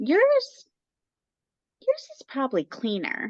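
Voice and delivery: high, sing-song, backhanded tone. Retelling what a roofing company lady said about the house: imitating the lady's backhanded compliment. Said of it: "the way she said it".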